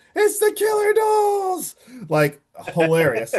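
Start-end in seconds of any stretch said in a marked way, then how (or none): 0.1-1.7 put-on very high, sudden, drawn-out scream. Retelling a film scene where a character spots the dolls: imitating a scream. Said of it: "Ralph right away screams".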